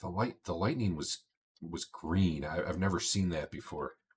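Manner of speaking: low confiding hush. Speaker retells a man's account of a storm, in a lowered voice. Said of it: "He he kind of lowers his voice and looks around".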